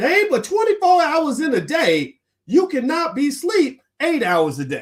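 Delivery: very high, swooping put-on voice. Quote what Steve Harvey said, trying a Steve Harvey voice. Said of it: "I'm going to try to use my Steve Harvey voice".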